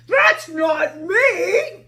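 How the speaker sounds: loud growl with drawn-out "me". Reading a children's story where Lion sees Sarah's drawing of him; Lion growling. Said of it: "he growled".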